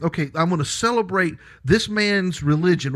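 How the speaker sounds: plain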